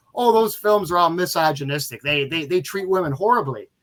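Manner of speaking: ordinary talk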